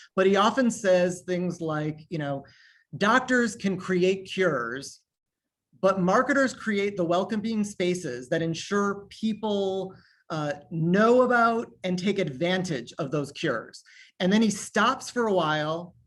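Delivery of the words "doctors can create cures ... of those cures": usual speaking voice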